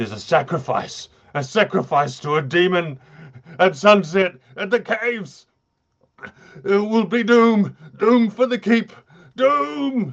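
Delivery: very high, rising terrified stammer, "doom" stretched out. A game master voices a curate struck by a horrific vision, stammering in horror. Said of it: "And as the curate investigates this further, suddenly he has this horrific vision".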